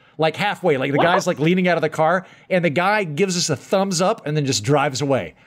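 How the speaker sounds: normal talking voice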